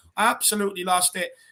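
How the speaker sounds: normal talking voice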